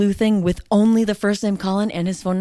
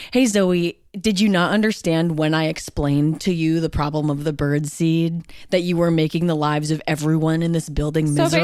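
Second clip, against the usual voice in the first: ordinary talk, nothing marked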